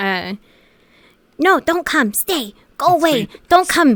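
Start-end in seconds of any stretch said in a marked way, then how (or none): 1.4-4.0 squeaky, very high, halting broken-English voice. Explaining the character she voices, the speaker shows how she talks: high-pitched broken English. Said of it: "I go really fucking high pitched".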